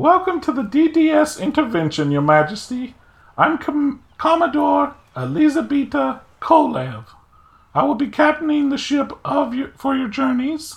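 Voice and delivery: high-pitched, ringing naval commodore voice. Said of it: "You asked for this voice".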